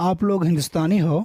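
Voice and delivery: statement tune rising at the end on हो. Teaching that a statement can ask by tone: rising at the end like a question. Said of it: "the tone is saying that we are asking".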